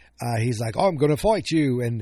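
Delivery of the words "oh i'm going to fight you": put-on high, unplanned, slipped-in British accent. Retelling what a character in a show said, in a british accent. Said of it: "I don't know why I turned British there".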